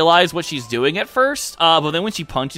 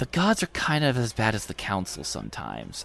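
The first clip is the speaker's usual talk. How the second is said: very quiet, low, hushed, secretive whisper; 7 semitones lower, 10 dB quieter than usual. A game master voices a character speaking to a player: whispering. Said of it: "She kind of looks around and whispers".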